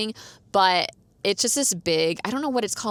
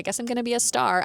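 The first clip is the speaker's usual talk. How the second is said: mock sarcastic inner voice; 4 semitones higher than usual. Retelling what was said to oneself at a costume event: own sarcastic remark. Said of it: "being sarcastic to myself".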